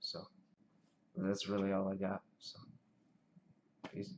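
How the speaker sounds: quiet, hushed voice. Talking while a roommate sleeps in the next room, speaking quietly. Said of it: "I'm just trying to be quiet".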